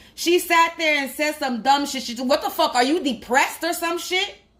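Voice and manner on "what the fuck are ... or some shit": play-acted yelling, toned down and mild. Retelling what a mother said to her son in a supermarket: imitating a mother yelling. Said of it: "That's what the fuck she yelled to her son".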